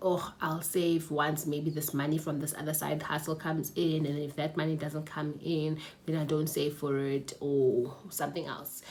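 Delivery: ordinary talk, nothing marked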